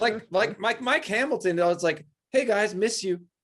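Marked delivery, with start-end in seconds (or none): 2.3-3.2 genuine, heartfelt, sweet, sincere tone. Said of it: "Like, real sweet".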